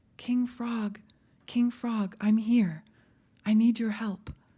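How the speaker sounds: tiny, very small storybook voice. She stops at the water's edge and calls to King Frog, very small voice. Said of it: "said in a very small voice".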